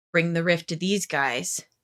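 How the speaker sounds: ordinary delivery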